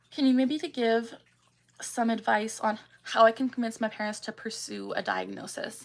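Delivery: ordinary talk, nothing marked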